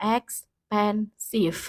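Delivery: "expensive" very slow, drawn out syllable by syllable. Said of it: "Contohnya dalam layar adalah expensive".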